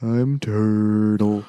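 slow, dim-witted, drawn-out cartoon turtle voice. Comparing the original turtle character to its english dub: slow, dim turtle voice. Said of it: "turtles are slow. Have them talk slow".

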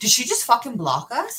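mock stunned, mind-blown, disbelieving tone. Retelling being blocked, the speaker acts out asking Brandon in mind-blown disbelief. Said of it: "Like I'm like mind blown".

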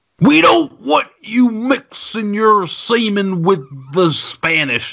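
slow, stretched-out, high-pitched character voice. Voicing an imagined bigot's line to a co-host: Bill Cosby voice. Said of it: "do I sound a little like Bill Cosby?".

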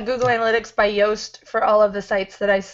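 ordinary talk

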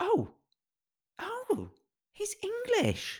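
high, slow, shocked gasp. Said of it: "I was shocked".

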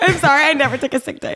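high, pleading, excusing tone.

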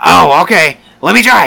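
high, slow, drawn-out creaky voice. Retelling how someone asked to drive the forklift, imitating Dave. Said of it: "you can't sound like Dave".

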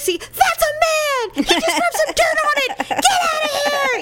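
high, loud, rowdy cheering yell.

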